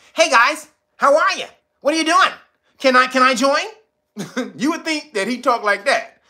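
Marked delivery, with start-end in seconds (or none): 0.2-3.6 clean-cut, high, loud preppy guy voice.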